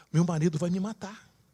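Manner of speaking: frightened, high, quick blurt. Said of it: "E ela fica apavorada".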